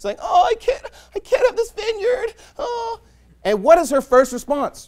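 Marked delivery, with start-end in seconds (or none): 0.2-3.0 very high, whiny sobbing whimper. Retelling how a king complains at home to his wife: imitating Ahab crying. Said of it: "he's crying to his wife".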